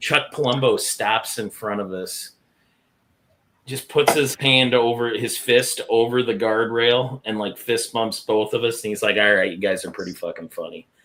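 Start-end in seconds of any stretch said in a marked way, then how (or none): 9.2-10.8 muttered under the breath, lower. Retelling what Chuck Palumbo said after the match: under his breath. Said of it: "under his breath".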